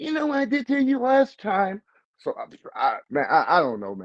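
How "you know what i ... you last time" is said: put-on baby-talk voice, very high-pitched. Retelling how the boxer Ryan talks now: imitating Ryan talking like a baby. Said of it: "he out there talking like a baby".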